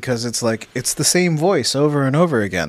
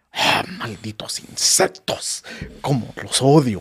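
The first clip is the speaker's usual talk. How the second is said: Mexican Spanish-dubbed cartoon villain voice; 2 semitones lower than usual. Describing a Mexican voice actor's roles, doing his Spanish-dub Frieza voice. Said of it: "his Frieza is like".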